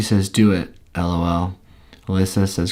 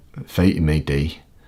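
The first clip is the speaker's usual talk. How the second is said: put-on Scottish accent, much lower pitch; 4 semitones lower than usual. Trying out lines from Braveheart, the speaker does a Scottish accent. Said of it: "this is about what I'd sound like if I was doing a Scottish accent".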